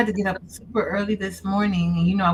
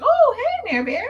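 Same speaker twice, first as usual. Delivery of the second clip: very high-pitched, put-on, fake surprised tone; 3 dB louder than usual. Imitating own call, acting surprised to be on the phone. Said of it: "I'm surprised that I called".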